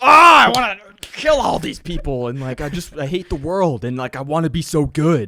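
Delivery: intense, very loud, drawn-out aggressive rant. Imitating John as an intense, aggressive entertainer: imitating John, intense and aggressive. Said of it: "if it was John that's just like".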